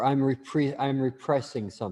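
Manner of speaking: normal talking voice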